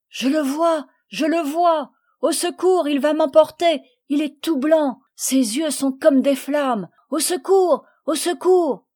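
frantic, high-pitched, hysterical panic with nervous cries. A young worker in a fit of nerves cries out again and again, screaming in hysterics. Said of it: "se tordait dans une attaque de nerfs, criant et répétant".

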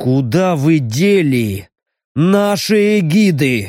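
ominous, sinister, very slow, drawn-out, menacing voice. An interrogator repeats the main question to a captive elf, in a sinister voice. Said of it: "Зловещим голосом повторил".

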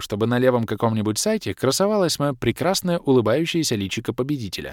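plain

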